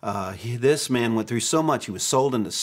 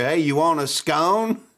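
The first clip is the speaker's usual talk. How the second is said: put-on deep Arkansas accent; 4 semitones higher, 3 dB louder than usual. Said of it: "he was deep Arkansas".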